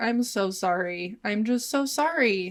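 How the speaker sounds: put-on crying, tearful voice. Retelling an apology to a friend at dinner: imitating own crying apology. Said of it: "I'm crying".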